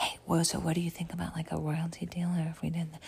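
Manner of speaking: put-on dramatic whisper. Retelling how one person walks over to another with an offer: imitating a dramatic whisper. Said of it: "whisper, whisper, whisper".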